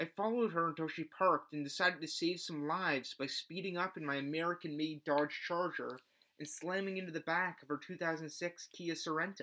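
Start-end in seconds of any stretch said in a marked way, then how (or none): none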